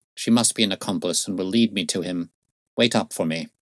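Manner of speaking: usual speaking voice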